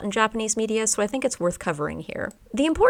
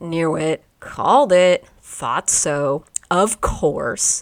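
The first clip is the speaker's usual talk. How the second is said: slow, grudging, sarcastic tone; 3 semitones lower, 5 dB louder than usual. Demonstrating how yappari sounds when you were right and feel bad: sarcastic tone. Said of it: "but said in a sarcastic tone".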